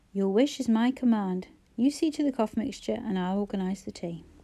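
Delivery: ordinary delivery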